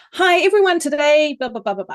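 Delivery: high, loud, excited and full of pep. Demonstrating how to open a podcast so listeners feel excited, excited and energetic. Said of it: "faster pitch and more energy in your voice".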